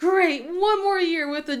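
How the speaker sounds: teasing mock groan.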